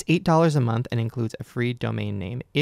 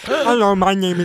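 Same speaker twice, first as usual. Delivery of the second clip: mocking slightly deaf-sounding delivery, higher and louder; 9 semitones higher, 8 dB louder than usual. Repeating another speaker's practice line back: imitating slightly deaf speech. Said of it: "a little bit of deafness".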